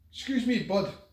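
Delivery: mock Glaswegian shouting. Retelling how a stranger called out in the corridor: imitating a glaswegian shouting. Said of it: "this Glaswegian voice shouting".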